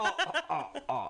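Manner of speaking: high-pitched laughing "oh oh".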